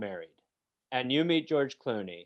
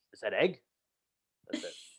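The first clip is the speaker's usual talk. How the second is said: put-on gruff film star voice, pitched lower; 4 semitones lower, 4 dB quieter than usual. Doing an impression at a wedding, after being asked: Robert De Niro impression. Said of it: "my impression of Robert De Niro at a wedding".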